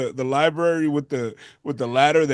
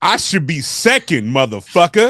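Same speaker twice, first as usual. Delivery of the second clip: put-on manly voice, louder; 6 dB louder than usual. Repeating a request after being told to speak up: talking like a man. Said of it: "talk like a man".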